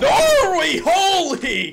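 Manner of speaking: excited voice cracking very high. Commentating a match as a team scores: voice cracking. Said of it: "don't mind the, the voice crack".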